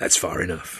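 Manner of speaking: put-on low, rasping, raspy old man voice. Narrator voicing an old man who has just stopped walking, raspy old man voice. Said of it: "his rasping voice saying".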